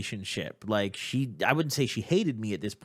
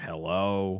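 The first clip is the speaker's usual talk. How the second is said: put-on annoyed tone, lower; 3 semitones lower than usual. Retelling a phone call, imitating mom answering: imitating mom's mad hello. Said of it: "she always had this voice where she was like, she was mad at me".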